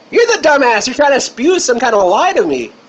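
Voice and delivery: high-pitched voice. Arguing with another speaker about science: high-pitched voice. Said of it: "you're talking a high-pitched voice again".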